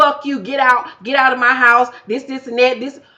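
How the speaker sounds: mock furious yelling, angry woman's voice. Retelling a woman ordering a man out of her house: imitating an angry woman. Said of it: "And she gets mad".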